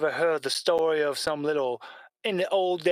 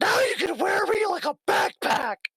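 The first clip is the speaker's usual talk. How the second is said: very high, squeaky cuckoo-clock creature voice. Voicing Strippy, who tells the players about his portable mode: Strippy's voice. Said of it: "attaches to the little cuckoo clock and goes".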